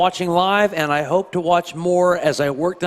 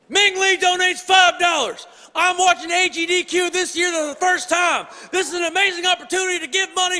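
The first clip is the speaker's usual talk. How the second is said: very high, barking drill sergeant shout; 12 semitones higher than usual. Reading out a donation message as requested, in a barking drill sergeant voice. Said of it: "they want me to read it as a drill sergeant".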